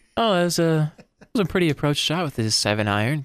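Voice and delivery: relaxed, easygoing golf-broadcast commentator voice. Showing how calling a golf broadcast would sound: low relaxing voice. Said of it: "talk in my kind of low voice here".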